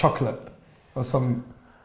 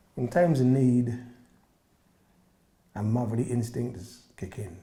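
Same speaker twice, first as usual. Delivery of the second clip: sensitive, poignant and vulnerable delivery; 3 semitones lower, 9 dB quieter than usual. Saying the line on cue after recalling a proud moment with mother, poignant, vulnerable delivery. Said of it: "I've never seen you so vulnerable and sensitive before".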